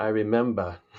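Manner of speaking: Boston-accented way of speaking, short phrase. Saying a favorite phrase the way it sounds in a boston accent. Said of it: "as I say in my Boston accent".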